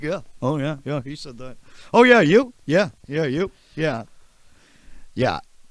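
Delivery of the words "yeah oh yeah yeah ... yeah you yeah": booming, high, loud, eager go-along agreeing tone. Joking that Colin will just agree, imitating Colin agreeing. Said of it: "He'll be like".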